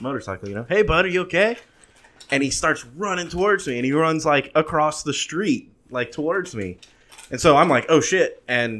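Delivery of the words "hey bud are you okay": calling out, hailing yell. Retelling yelling from a motorcycle to a kid on the sidewalk, retelling a yell. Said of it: "And I'm yelling at him".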